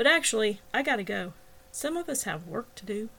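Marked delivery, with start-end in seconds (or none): none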